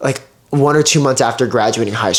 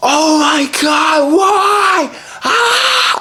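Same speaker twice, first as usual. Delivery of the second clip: acted furious top-of-lungs scream, very high, slow, rising. Retelling screaming while driving to deliver pizzas: imitating own past screaming. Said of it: "screaming at the top of my lungs".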